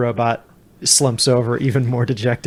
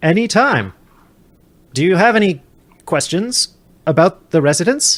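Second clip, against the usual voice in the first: robot butler voice, pitched higher; 5 semitones higher than usual. Voicing a butler droid giving an impromptu tour of the parlor: butler droid voice. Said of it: "says the butler droid, who is giving you an impromptu tour".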